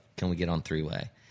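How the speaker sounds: put-on serious, formal phone voice. Retelling the record label's morning phone call, mimicking a real serious voice. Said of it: "Real serious voice".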